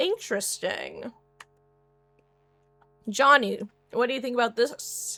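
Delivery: talking while eating. Speaker turning to Johnny for his view, talking with mouth full. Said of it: "sorry for talking with food in my mouth".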